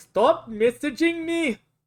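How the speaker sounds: awful, bad, put-on Indian accent. Imitating a man who keeps posting messages: put-on Indian accent. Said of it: "with the accent there".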